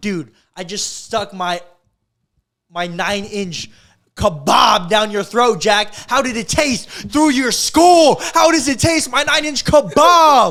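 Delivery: very loud, high-pitched ranting yell. Retelling a man yelling at Jack from a van window, imitating his yelling. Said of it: "He's like yelling out the window".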